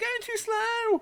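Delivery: shrill, very high-pitched whine. Imitating drivers complaining on the radio about the safety car: imitating a whiny driver. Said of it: "it does sound horrifically whiny".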